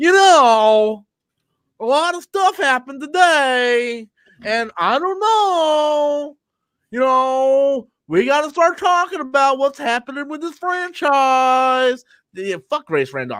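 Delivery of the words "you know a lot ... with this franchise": slow, pitched-up drawl, "know" stretched out. Ranting about a franchise pundit, doing a Grace Randolph impression. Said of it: "here's my impression of Grace Randolph".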